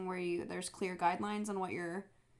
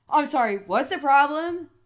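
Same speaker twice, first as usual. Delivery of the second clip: put-on crazy man voice, much higher; 7 semitones higher, 16 dB louder than usual. Retelling how a stranger who sat at her table answered her, imitating a guy being crazy. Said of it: "like being all crazy".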